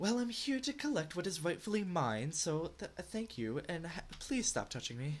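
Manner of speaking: talking cat character voice. Voicing a cat that asks to collect what is its own: talking cat voice. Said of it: "I never thought I'd be voicing a cat".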